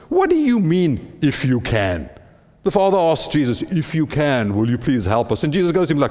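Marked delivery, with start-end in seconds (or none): 0.1-2.1 mock exasperation, slow with swooping pitch. Retelling a father's plea and the reply to it, mock-exasperated Jesus. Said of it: "Jesus' exasperated response".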